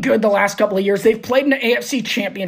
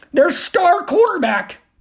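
voice cracking and jumping high mid-phrase; 7 semitones higher than usual. Speaker talking football when the voice suddenly cracks; voice cracking. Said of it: "my voice just cracked".

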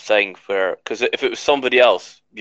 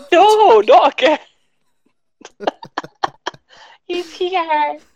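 silly, funny comic voice, much higher; 5 dB louder than usual. A host voices one of the cards yet again, in a funny card voice. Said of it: "you doing a funny voice of".

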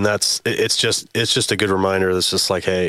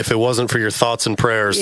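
ordinary talk

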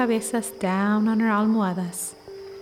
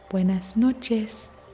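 calm, gentle, peaceful voice. Speaker teaching spanish has listeners repeat the phrase in a gentle, peaceful voice. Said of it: "repeat after me in your most gentle, peaceful voice".

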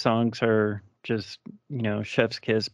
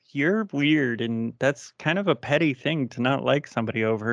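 usual speaking voice

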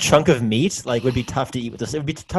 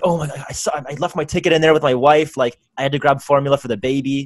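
plain

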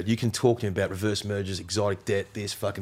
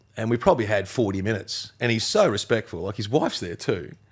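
ordinary talk

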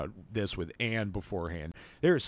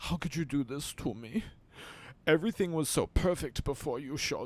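put-on tearful voice, higher pitch; 5 semitones higher than usual. Retelling what a crying character says in a dramatic scene: imitating someone crying. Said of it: "she's crying".

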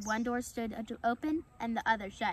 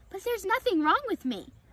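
aghast, disbelieving, high, loud horrified cry; 9 semitones higher, 5 dB louder than usual. An animal in a rehabilitation pen answers a possum: horrified. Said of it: "his eyes widening with horror".

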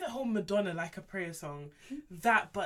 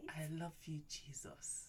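mock seductive voice, lower and quieter; 4 semitones lower, 15 dB quieter than usual. Retelling a man's prayer in the voice guys use for pillow talk: imitating a put-on pillow talk voice. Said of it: "it's that voice".

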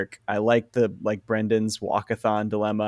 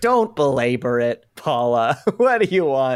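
laughing in a mocking way; 3 semitones higher than usual. Recapping a show scene where she asks for a raise, imitating Mr. Lindenson laughing at her. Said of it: "Lindenson just starts laughing, laughing at her".

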